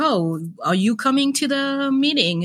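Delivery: high-pitched yelling. Acting out a man yelling at the speaker in front of a client, retelling a yell. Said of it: "he's like yelling at me in front of the client".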